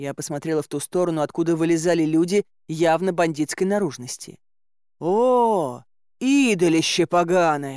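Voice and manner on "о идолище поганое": gleeful, delighted, joyful cry with drawn-out "oh". A man points at a very fat man in foreign clothes, joyful exclamation. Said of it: "Как-то особо радостно воскликнул Илья".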